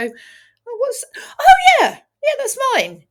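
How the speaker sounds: very high, swooping cartoon sheep voice. Retelling how the sheep reacts when handed her lamb: voicing the sheep. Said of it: "and she'd go".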